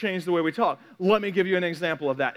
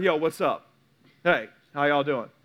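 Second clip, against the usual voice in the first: low, laid-back, easygoing casual tone; 6 semitones lower than usual. Speaker shows how they would greet teenagers: casual talk to teenagers. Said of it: "speak to the teenagers".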